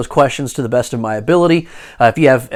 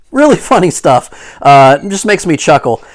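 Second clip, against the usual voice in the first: ordinary delivery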